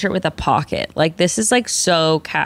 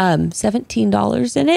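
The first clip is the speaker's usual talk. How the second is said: slightly lowered, hushed voice; 2 semitones higher than usual. Acting out what he said to you, slightly lowered voice. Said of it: "he lowers his voice slightly".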